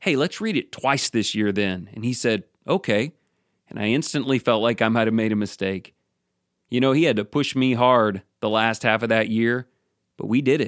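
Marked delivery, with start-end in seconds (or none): 0.0-1.9 acted-out, smart-alecky, snarky tone. Retelling his reply when a friend called him, recreating a snarky little tone. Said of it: "in a snarky little tone".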